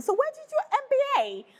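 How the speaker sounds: put-on British accent, very high pitched and swooping. Retelling what a guy at training in london asked: british accent. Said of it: "the British accent".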